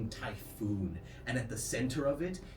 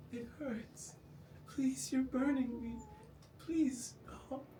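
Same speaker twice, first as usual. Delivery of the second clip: very high, pained, pleading tone; 13 semitones higher, 3 dB quieter than usual. Voicing a burning figure begging the player to stop: pained pleading. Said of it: "He goes".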